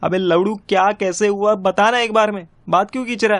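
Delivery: high-pitched, furious angry shout. Demanding to hear from the other man what happened, shouting. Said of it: "चिल्ला मत भाई".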